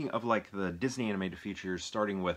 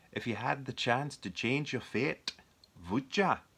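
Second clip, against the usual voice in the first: amateur, attempted put-on Scottish accent; 4 semitones higher than usual. Speaker repeats a line, trying it again in an attempted scottish accent. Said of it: "like a Scottish accent?".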